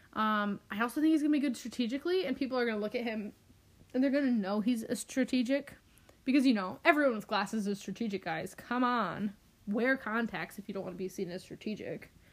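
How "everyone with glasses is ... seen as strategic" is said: dry, sarcastic, tongue-in-cheek delivery. Addressing viewers about a player, sarcastic. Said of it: "That was sarcasm".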